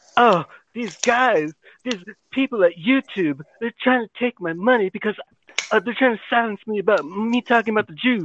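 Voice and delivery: high, showy, put-on Hollywood-style celebrity voice. Mocking a commentator by redoing his Hollywood impression: imitating Hollywood Benjamin impression. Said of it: "his Hollywood impression, it's him".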